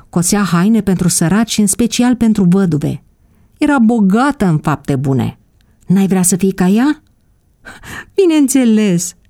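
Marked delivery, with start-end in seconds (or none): 8.2-9.1 joyful, delighted outcry. Elena replies to the question, exclaiming. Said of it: "a exclamat Elena".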